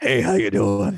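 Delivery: creepy, groggy, just-woke-up morning man's voice. The speaker demonstrates his creepy dude voice, his voice on waking up. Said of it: "my creepy dude voice was just my voice, but like when I wake up in the morning".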